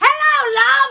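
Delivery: very high, loud "hello" stretched long. Retelling how a guy at the meet and greet greeted them: imitating someone saying it really loud. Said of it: "really loud".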